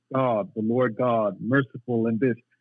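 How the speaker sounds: plain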